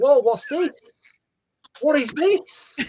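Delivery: high, slow, stretched-out, amazed "whoa".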